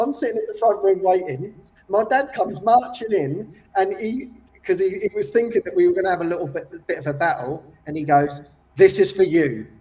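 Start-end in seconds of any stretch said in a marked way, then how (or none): 8.8-9.6 forceful, blunt delivery. Retelling how dad handed over a gift: imitating dad saying it forcefully. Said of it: "really, like, forcefully".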